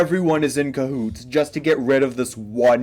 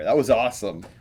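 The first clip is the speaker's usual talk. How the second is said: ordinary talk, nothing marked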